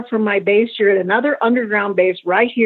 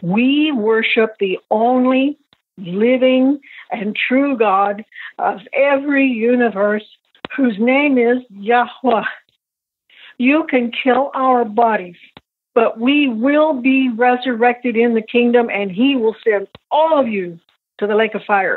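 ordinary delivery

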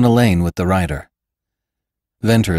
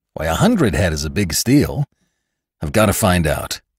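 usual speaking voice

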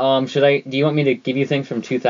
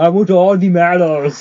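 put-on voice, bit of Austrian accent, higher, louder; 5 semitones higher, 4 dB louder than usual. Doing a requested Animaniacs character voice: Nils voice. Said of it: "do your Nils voice".

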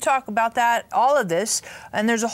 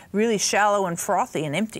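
ordinary talk

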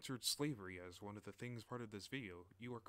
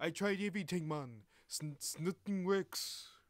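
put-on Jamaican accent, much higher, louder; 8 semitones higher, 11 dB louder than usual. Redoing a quoted line from a subtitled scene, Jamaican accent. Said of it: "I forgot to do my Jamaican accent".

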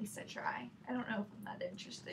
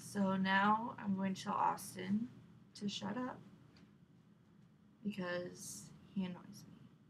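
flat, dead-level monotone drone, very slow, dragged out. Saying a line the way they were told to: monotone, very slow. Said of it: "You gotta say it like all monotone, very slow".

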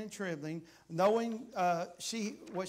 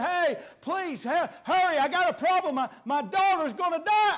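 loud, high, stumbling put-on desperate begging; 10 semitones higher, 10 dB louder than usual. Retelling a father's plea to Jesus for his dying daughter: acting out a desperate begging plea. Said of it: "he's begging Jesus".

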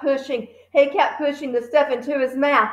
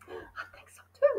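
slow, hushed, very quiet whisper; 12 semitones higher, 13 dB quieter than usual. Narrator reading Lavender answering Matilda while watching a contest, whispered reply. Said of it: "Lavender whispered back".

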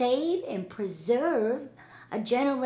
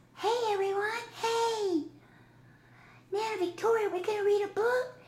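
very high-pitched hand-puppet character voice; 10 semitones higher than usual. Speaking as her pink hand puppet, greeting everyone: pink hand-puppet voice. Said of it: "her PINK hand-puppet [name]".

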